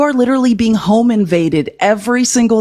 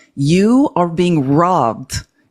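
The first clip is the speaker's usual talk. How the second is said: slow, deliberate, each word emphasized; 3 semitones lower than usual. Speaker repeating a point slower to a critic who won't show their face, slow and deliberate. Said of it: "let me say it again slower for you".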